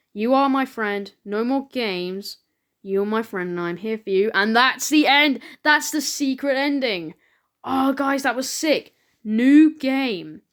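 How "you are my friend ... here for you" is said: ordinary delivery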